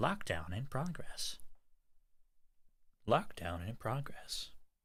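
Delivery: small robotic voice, announcer-like. Narrating what the listener hears, a small robotic voice. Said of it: "small robotic voice saying".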